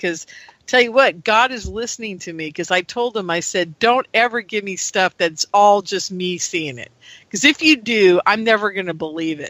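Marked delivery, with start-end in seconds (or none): none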